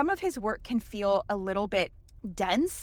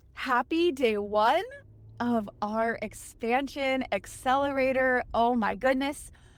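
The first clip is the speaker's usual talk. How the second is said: audible smile, overflowing energy, excited and bubbling; 2 semitones higher than usual. Speaker welcoming the audience to day one of the accelerator, excited, smiling voice. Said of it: "You can probably hear it in my voice".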